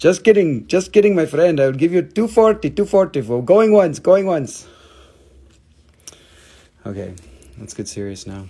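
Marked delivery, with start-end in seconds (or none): 0.0-4.3 put-on Indian accent. Haggling over a price with a viewer as a wholesaler: put-on Indian wholesaler accent. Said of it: "when I talk like this".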